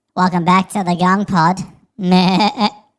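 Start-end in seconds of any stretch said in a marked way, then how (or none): 0.2-1.6 much higher pitched-up voice. Repeating the gong pod welcome, showing off a pitched-up voice. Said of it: "I can actually up pitch my voice like that".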